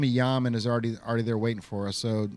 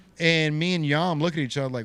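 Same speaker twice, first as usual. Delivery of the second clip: usual speaking voice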